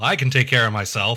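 plain

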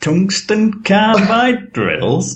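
approximated, put-on Northern English accent. Urged to say it, the speaker repeats the phrase in a northern english accent. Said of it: "That was a perfect approximation of a Northern English accent".

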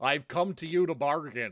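terrible, badly done put-on American accent. Doing the voice during a chat, Benedict Cumberbatch's American accent. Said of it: "Only when I do the voice".

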